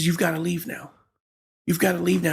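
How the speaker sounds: put-on tearful crying voice. Retelling the mother telling them to leave: imitating mother crying. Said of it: "She's crying".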